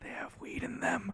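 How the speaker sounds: very quiet, hushed, breathy whisper. Retelling what she said while leaning in close: imitating a quiet whisper. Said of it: "I'll say it louder for the microphone".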